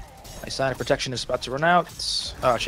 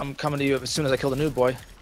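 ordinary delivery

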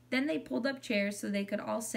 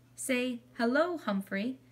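kindly, gentle tone; 3 semitones higher than usual. A girl gently instructing her mother. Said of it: "Saya gently instructed her mother".

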